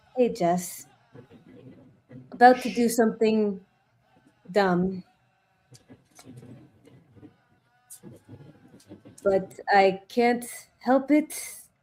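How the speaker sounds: low, grumbling mutter, half to oneself. A player speaks to Jess through a sending stone, muttering under breath. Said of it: "just mutter under my breath".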